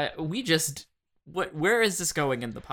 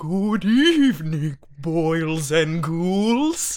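loud, put-on, spooky ghoulish voice; 7 dB louder than usual. Doing a Halloween bit, greeting everyone in a spooky voice. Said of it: "I can do a spookier voice".

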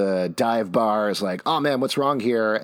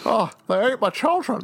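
put-on very high, old-Hollywood movie-star style voice; 13 semitones higher than usual. Retelling a scene from It's a Wonderful Life: Jimmy Stewart impression. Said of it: "perfect Ja-, Jimmy Stewart".

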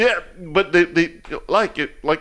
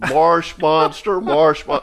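usual speaking voice

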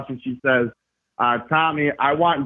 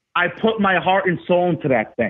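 ordinary talk, nothing marked

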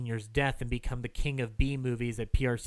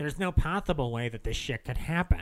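ordinary talk, nothing marked

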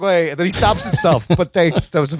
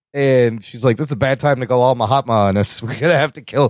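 usual speaking voice

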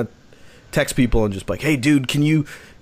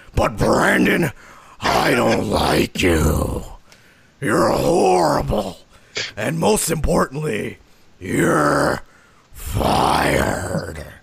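deep, rough, throaty guttural voice. Acting out firing people one by one: guttural voice. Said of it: "I went guttural with that one".

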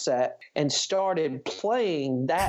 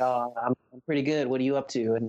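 put-on soft-spoken man voice; 3 semitones lower than usual. Retelling a phone call, the speaker quotes Howard's reply: Howard's soft-spoken voice. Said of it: "he's real soft-spoken".

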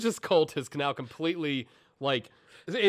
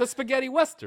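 very high, over-the-top, exaggerated Italian accent; 9 semitones higher than usual. Friend naming the film genre in conversation, in an offensive Italian accent.

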